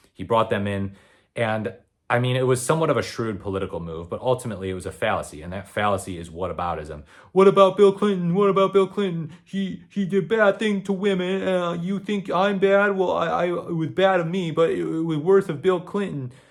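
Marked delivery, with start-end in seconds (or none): 7.3-16.3 very high, loud, foolish put-on little boy voice. Mocking a whataboutism argument about bill clinton: foolish little boy impression. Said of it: "This is intended to be a foolish little boy impression".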